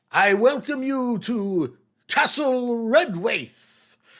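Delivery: lofty, grand, courtly herald announcer voice, very high. Voicing a goat-legged creature welcoming visitors to a castle, grand courtly herald voice. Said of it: "he says, as if, you know, the place is full of courtiers".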